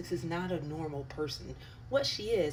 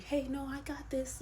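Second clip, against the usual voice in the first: mock demure, overly polite, pitched-up voice; 8 semitones higher than usual. Imitating someone holding flowers at a walkabout: imitating someone overly nice. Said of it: "overly nice, kinda demure".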